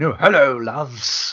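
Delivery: DJ-style delivery. Joking that a character's voice could morph into a radio DJ's: Simon Bates voice. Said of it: "his voice to sort of morph into Simon Bates".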